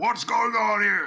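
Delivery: big booming voice, pitched very high. Narrating a scene, a tusked figure approaching calls out in a booming voice. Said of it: "you hear this booming voice say".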